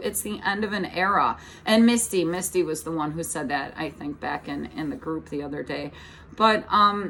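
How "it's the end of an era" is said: ordinary delivery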